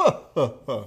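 booming, belted-out "huh huh huh" laugh. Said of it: "you wanna hear my O J impression again?".

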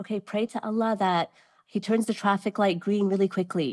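worn-out, exasperated, fed-up tone. Retelling telling a daughter to pray in stuck traffic: imitating an exasperated tone. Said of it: "exasperated, I said".

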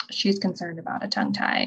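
mock under-the-breath mutter. Retelling what the lactation person said to the pediatrician, mimicking an under-the-breath remark. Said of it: "like under her breath".

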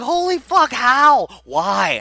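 put-on very high, drawn-out, swooping, shocked, excited screaming. Retelling a friend's reaction to a trailer: imitating someone screaming. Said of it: "just starts screaming at the T V".

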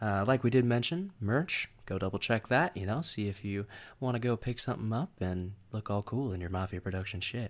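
ASMR-like delivery. Giving the closing requests to listeners in a put-on voice: ASMR-like voice. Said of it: "It's like some A S M R".

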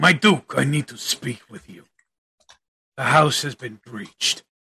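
acted, in-character lion-like beast-man voice. Voicing a character who reports to his Duke: Lion Man voice. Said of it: "You hear him go".

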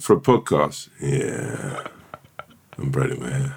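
very low, very slow, seductive drawl. Mimicking how the other speaker just sounded: imitating a sexy voice. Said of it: "You went".

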